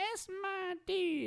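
put-on tiny, very high little child voice. Retelling a taunt heard from the TV in surround sound, high-pitched child voice. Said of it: "in his like little high pitched child voice".

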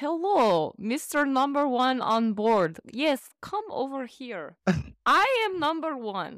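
high, swooping put-on Russian accent. Imagining petty criminals who are fans of the work: put-on Russian accent. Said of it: "What accent is that?".

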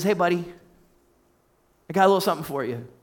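tender, very gentle, quick, reassuring voice. Preacher retells God speaking to a man, retelling gentle speech. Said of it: "very gently says".

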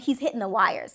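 normal talking voice

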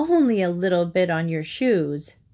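ordinary delivery

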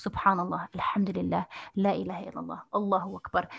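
ordinary talk

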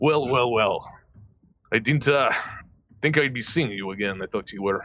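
pirate character voice. Player announces they will do a pirate and voices the character, pirate voice. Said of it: "I'm going to do pirate".

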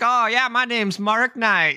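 very high-pitched country twang. A player retells the character's reply when spoken to in Abyssal, country twang. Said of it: "he sounds like he has a country twang".

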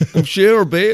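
bad put-on impression. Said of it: "what's your share impression?".

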